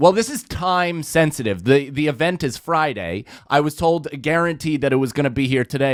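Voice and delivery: ordinary talk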